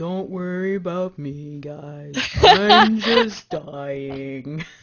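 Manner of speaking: low, very slow, swooping, drawn-out drawl. Reading a chat message aloud to viewers, in Eeyore voice. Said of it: "in the best Eeyore voice".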